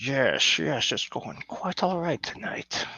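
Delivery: a slight, faint Scottish accent. Answering how it's going after turning the mic on: sounds like Sean Connery. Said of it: "you sound like Sean Connery".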